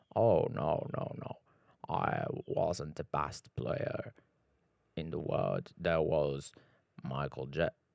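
low, thick, deep, slow, half-whispered voice. Imitating a basketball player talking about the Chicago Bulls: deep Scottie Pippen voice. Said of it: "bué da grossa".

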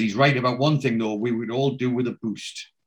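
ordinary delivery

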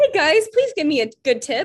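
high, sing-song, put-on fake-nice service voice. Speakers joke about how their voices change when asking customers for tips: higher-pitched service voice. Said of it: "Like it's higher pitched".

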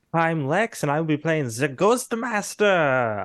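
put-on German accent. Introducing himself and his role, in a put-on German accent. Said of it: "I don't know why I went German for that".

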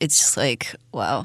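sarcastic delivery. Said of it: "I am being sarcastic".

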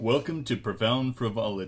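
soft, put-on show announcer delivery. Opening with a welcome to Profound Frivolity, in an announcer voice. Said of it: "That's like an announcer's voice".

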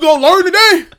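shrill, very loud, high, belted out. Quoting a comedian's famous line: imitating Kevin Hart's catchphrase. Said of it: "annoying Kevin Hart bar".

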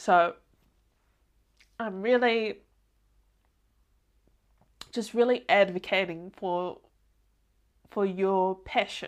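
speaking through tears. Speaker advocating for listeners' passion for their field, crying while talking. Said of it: "I think I'm crying".

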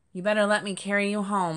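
said firmly, with firmness. Oak speaks to Jasper, who wants to get a tree: firm. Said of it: "Oak said firmly".

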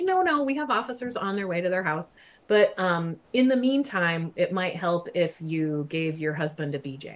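usual speaking voice

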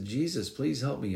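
mock insistent pleading. Like a desperate man in a crowd who refuses to be hushed, throwing his plea out as loudly as he can so that it cannot be ignored. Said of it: "he raised his voice".

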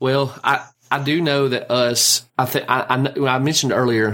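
stammering, stumbling and restarting, repeating "I". On a horror podcast, a speaker recalls an earlier point while stammering. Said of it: "Sorry, I'm stammering over this".

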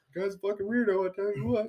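quiet, slightly high cartoon voice. Joining a friend's impression game, doing a Hank Hill impression. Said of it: "was that Hank Hill?".

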